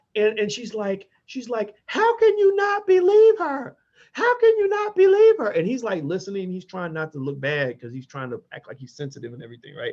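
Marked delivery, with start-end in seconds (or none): 1.8-5.5 mock crying, shrill tearful screaming yell, very high. Retelling a woman confronting a senator in an elevator, imitating her yelling and crying. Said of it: "she's yelling and she's crying and she's screaming".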